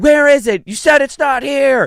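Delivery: put-on very high, drawn-out, dragged-out hollering. Retelling how a daughter acts when she can't find something: imitating daughter yelling. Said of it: "She'll then start yelling".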